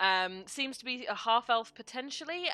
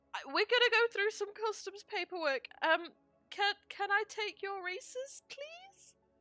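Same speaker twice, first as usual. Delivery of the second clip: put-on very high, nervous young kid voice; 11 semitones higher, 4 dB quieter than usual. Voicing Dean, a kid handling customs paperwork, nervous Dean voice. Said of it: "this kid looks very, very nervous as he speaks up and says".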